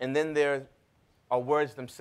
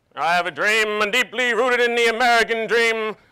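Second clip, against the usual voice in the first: very loud, high, belted speaking voice; 10 semitones higher, 9 dB louder than usual. Retelling an eighth-grade speech audition: Martin Luther King impression. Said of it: "I do my best Martin Luther King impression".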